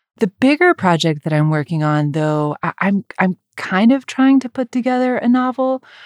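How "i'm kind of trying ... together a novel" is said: hesitant, much higher pitch. Talking about the bigger project he's working on: hesitant. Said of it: "You hear the hesitation in my voice".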